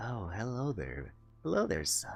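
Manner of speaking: hushed sultry voice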